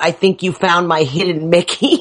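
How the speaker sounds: ordinary talk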